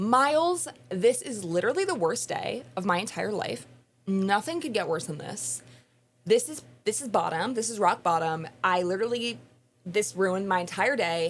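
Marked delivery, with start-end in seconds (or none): none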